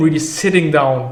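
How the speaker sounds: usual speaking voice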